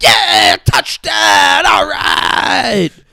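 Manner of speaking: acted-out loud, drawn-out whooping cheering shout. Retelling characters watching football as the team scores: imitating fans cheering a touchdown. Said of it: "They're like".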